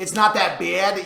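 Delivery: New York accent. Asked to repeat the phrase one more time, saying it in a new york accent. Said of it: "You're from New York".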